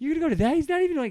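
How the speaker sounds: put-on whiny teenager voice, high and loud. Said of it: "non-whiny teenager voice".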